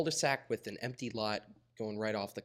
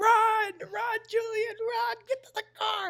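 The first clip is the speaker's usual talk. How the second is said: very loud, very high shrieked screaming; 9 dB louder than usual. Retelling the moment they called out to Julian: retelling a scream.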